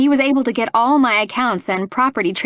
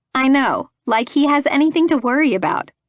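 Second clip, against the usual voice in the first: ordinary delivery, nothing marked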